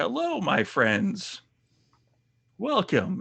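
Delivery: put-on elderly old wizard voice, high and swooping. Speaker describing a room does an impersonation; Diablo 2 character impression. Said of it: "do my best impersonation of somebody from Diablo 2".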